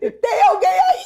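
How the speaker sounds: acted, very high, shrill, desperate shout. Retelling calling out at the front door of the house: imitating own past shout. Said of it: "eu gritei".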